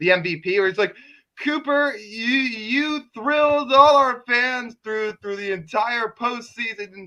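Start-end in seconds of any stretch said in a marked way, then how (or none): 1.4-7.1 put-on drunk slurring voice, pitched up. Imagining an MVP trophy presentation: drunk Rob Manfred impression. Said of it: "his best impersonation of intoxicated Rob Manfred".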